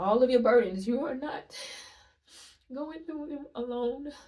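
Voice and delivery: crying through the words. Speaking to an audience while trying to stop crying, crying, voice breaking. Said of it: "I'm trying my best to stop crying".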